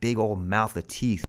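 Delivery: ordinary delivery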